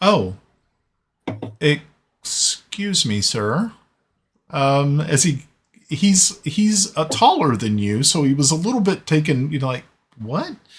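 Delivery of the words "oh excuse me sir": caught off guard, flustered, stammering, very slow and drawn out. A character who has never met a dwarf greets one, flustered, stumbling surprise. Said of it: "stumbles for just a moment because he's never met a dwarf".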